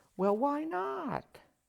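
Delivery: very high, slow grandmotherly voice.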